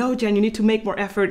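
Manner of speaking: ordinary talk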